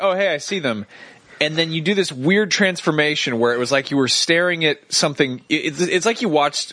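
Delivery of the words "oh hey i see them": ordinary delivery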